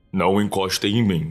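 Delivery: very deep, menacing demonic voice. Retelling how Luzinete spoke as others went to help her: Luzinete's very deep voice. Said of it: "com a voz mais grave que eu vi na minha vida".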